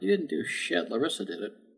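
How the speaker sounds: quiet, breathy, whispered mutter under the breath. Speaking as a character during the scene, muttering. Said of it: "There comes a muttering from Moon".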